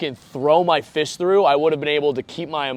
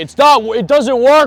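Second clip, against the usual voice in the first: put-on drunken scream, higher and louder; 9 semitones higher, 10 dB louder than usual. Retelling what was screamed to a townie at a bar: imitating himself screaming drunk. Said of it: "just screaming this to a townie".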